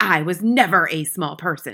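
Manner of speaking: sharp, snapping tone. Reading a woman answering a boy in the front row, snapping. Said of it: "she snapped".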